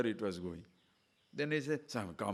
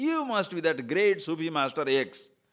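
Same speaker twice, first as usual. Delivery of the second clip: raised, pitched-up, mocking sarcasm; 9 semitones higher, 8 dB louder than usual. Retelling the orchard owner's jibe at the gardener: retelling a sarcastic remark. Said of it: "Sarcastically telling".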